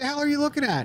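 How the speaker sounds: play-acted, very high, furious scream. Retelling how a woman in the street screamed at the speaker, retelling a woman's scream. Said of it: "screamed at me like".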